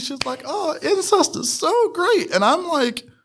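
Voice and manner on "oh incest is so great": put-on sugary, high, slow cutesy girl voice. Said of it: "she's all looking cutesy".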